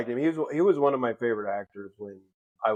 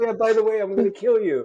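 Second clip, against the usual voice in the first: put-on cheerful, menacing villain voice, higher; 10 semitones higher, 4 dB louder than usual. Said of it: "So happy-go-lucky about, like, the darkest shit".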